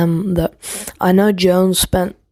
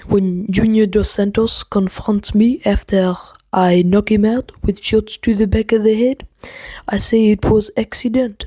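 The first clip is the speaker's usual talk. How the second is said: terrible, clumsy put-on French accent; 2 semitones higher than usual. Mocking a fighter's excuses, then apologizing for it: terrible french accent. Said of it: "that was a terrible accent".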